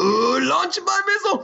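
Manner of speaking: shrill, creaky cartoon cowboy voice. Casting North Korea as a cartoon character, doing a Yosemite Sam voice. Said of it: "And then Yosemite Sam in North Korea".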